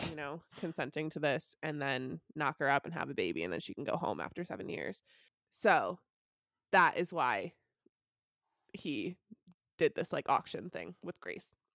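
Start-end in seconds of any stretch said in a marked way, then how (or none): none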